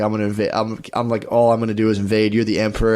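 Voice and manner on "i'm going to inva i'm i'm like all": plain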